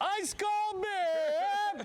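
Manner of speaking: mock stadium vendor holler, high and drawn out.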